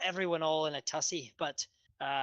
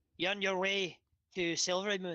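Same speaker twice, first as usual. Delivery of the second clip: put-on character voice in a Scottish accent; 4 semitones higher than usual. Narrating a scene, a speaker voices a passing woman, in a Scottish accent. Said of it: "It's a good accent".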